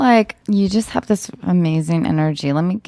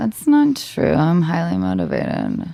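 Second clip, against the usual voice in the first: sluggish, half-asleep, lethargic nasal voice. Acting a scene, answering the other person's complaint: lethargic, nasal drugged voice. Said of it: "You sound like you're on Vicodin".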